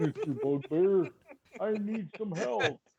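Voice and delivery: dumb giant voice. A player talking in character to a bugbear, in a dumb hill giant voice. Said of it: "I'm gonna sound like a dumb hill giant".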